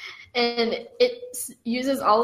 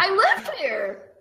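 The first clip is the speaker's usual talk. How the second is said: very high, cheerful creature voice; 9 semitones higher than usual. A monster in a cave answers a visitor asking what he's doing there, happy monster voice. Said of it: "He sounds so happy".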